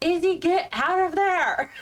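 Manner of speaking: acted shouting. Shouting a warning to izzy in battle: in-character yell. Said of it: "So I'm gonna yell".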